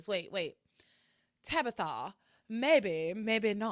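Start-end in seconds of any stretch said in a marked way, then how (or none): 1.4-3.7 poorly acted aloof, evasive, cagey tone. Retrying the Tabitha line after a failed attempt: terrible Tabitha impression. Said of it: "none of it's good".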